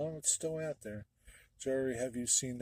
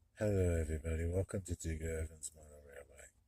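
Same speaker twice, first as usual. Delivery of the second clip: low-spoken, quiet, hard to hear; 6 semitones lower than usual. Show Digger how hard he is to hear in his videos, in a low-spoken imitation of Digger. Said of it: "That's my imitation of you".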